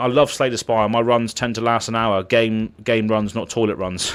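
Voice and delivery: ordinary talk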